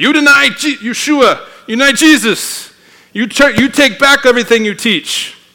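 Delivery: bad put-on Chinese accent. Retelling how communists threatened a missionary, the speaker quotes them in a bad Chinese accent. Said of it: "my bad Chinese accent".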